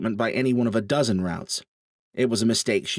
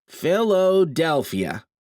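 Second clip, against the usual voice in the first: lilting singsong tone, higher pitch; 7 semitones higher than usual. Reading a story aloud, a character answering over an intercom: sing-song voice. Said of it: "Leo said in a sing-song voice".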